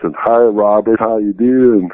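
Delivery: put-on slow, drawn-out, drawling Southern accent. Retelling a friend's phone calls before road trips: imitating a drawling southern accent. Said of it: "he has this drawing accent, you know, Southern accent".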